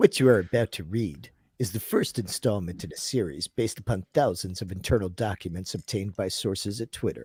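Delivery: put-on low, solemn, dramatic old-style TV narrator voice. Asked to read a text in an accent, chooses instead: Rod Serling impression. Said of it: "I'm gonna do this as Rod Serling".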